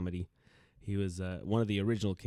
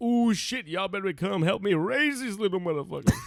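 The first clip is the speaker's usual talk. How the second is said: very high, shrill, loud comic stand-up shout; 12 semitones higher, 8 dB louder than usual. Retelling a comedian's stand-up joke in his voice: imitating Bernie Mac's stand-up delivery. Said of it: "He goes".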